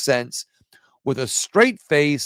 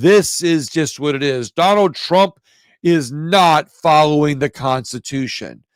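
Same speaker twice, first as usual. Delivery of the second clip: straight-faced, lofty, convinced tone; 4 dB louder than usual. Imitating how liberal leftists say things: a mock lofty, convinced tone. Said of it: "They'll say it with conviction like this".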